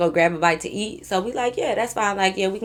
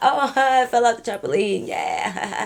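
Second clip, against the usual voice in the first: put-on slow speech broken up by laughter; 3 semitones higher than usual. Retelling joking with a friend at the table: imitating laughing while talking. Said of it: "laughing, like".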